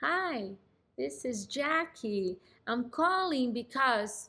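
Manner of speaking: unhurried, slow, quiet, low-volume voice. Imitating how a telemarketer talks on the phone: slow and quiet. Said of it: "they talk like this. ... They're speaking slow, their volume is low".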